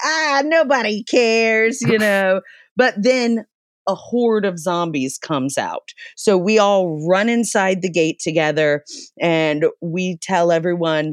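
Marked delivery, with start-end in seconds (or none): 0.0-1.8 put-on play-acted sloppy, slurred drunk voice, high. Retelling how the group answered the seismologist's warning, mock-drunk voice. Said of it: "we're drunkenly like".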